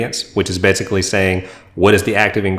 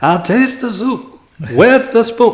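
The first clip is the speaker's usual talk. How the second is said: bad comedic put-on old man voice, higher pitched; 14 semitones higher than usual. Quoting Coming to America after another speaker's cue: bad Eddie Murphy impression. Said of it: "my bad Eddie Murphy slash Arsenio Hall impression".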